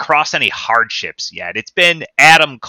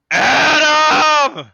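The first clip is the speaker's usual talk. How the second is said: higher-pitched put-on desperate yell. Mocking a wrestler's gimmick: imitating Roderick Strong yelling. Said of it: "he sounds like a dying dog just yelling for Adam".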